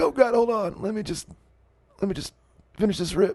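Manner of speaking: high voice, talking with breath held in. Joking that Bill Clinton sounds like he is holding in smoke: Bill Clinton impression holding in smoke. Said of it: "holding back a fat bong rip the whole time".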